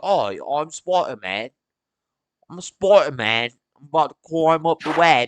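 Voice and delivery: put-on natural, easygoing British accent. Imitating an actor who switches between accents: Tom Holland British accent. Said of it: "He's British, but he does a good American accent".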